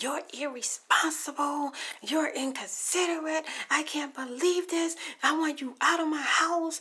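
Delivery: very loud screaming, hollering rant. Retelling a phone call, acting out the landlord's part: imitating landlord screaming. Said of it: "really screaming at me".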